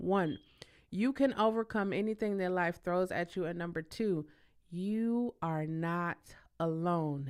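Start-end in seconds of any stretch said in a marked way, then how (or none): 4.7-7.3 very slow, deliberate, word by word. Sharing her personal experiences with listeners, very slow. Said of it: "I say that so slowly".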